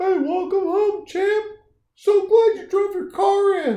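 drawn-out, slow voice pitched way up. Acting out the neighbor greeting someone coming home in the driveway: put-on neighbor voice. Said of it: "I love the voice".

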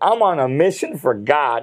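usual speaking voice

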